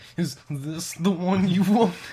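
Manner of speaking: frightened, uneasy, shrill and scared. Retelling a sword shop clerk's question: imitating someone sounding scared. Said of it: "he sounded super scared".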